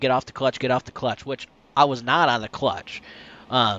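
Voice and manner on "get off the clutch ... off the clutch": usual speaking voice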